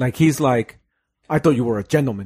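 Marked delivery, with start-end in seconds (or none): 1.3-2.3 flustered, fast, furious, angry outburst. Retelling how a confronted government official reacted, imitating someone furious. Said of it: "that guy gets so mad".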